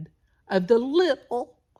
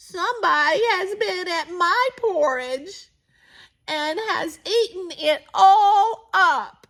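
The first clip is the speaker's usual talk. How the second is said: tiny, small, high-pitched storybook little bear voice; 11 semitones higher, 4 dB louder than usual. Reading the three bears story aloud, voicing the little wee bear: little small wee voice. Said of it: "in his little small wee voice".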